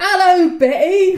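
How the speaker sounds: put-on shrill, very loud, high drunken holler. Retelling what a drunken young marcher shouted at the marches: imitating a drunken marcher. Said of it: "a very drunken young marcher just went".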